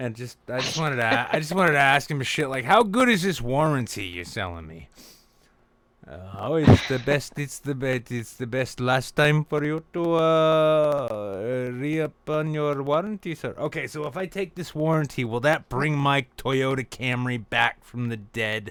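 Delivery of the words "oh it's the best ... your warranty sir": put-on slow Indian accent with drawn-out uh. Retelling a call with a warranty salesman; imitating James's Indian accent. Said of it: "get the Indian guy named James".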